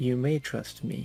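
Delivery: very quiet. Narrating a story, Azrael looks back at the guy and says it very quietly. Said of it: "just says very quietly".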